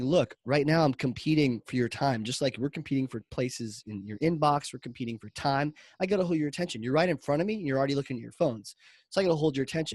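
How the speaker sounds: ordinary talk, nothing marked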